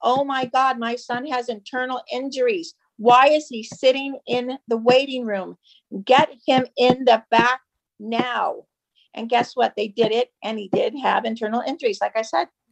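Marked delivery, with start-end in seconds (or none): none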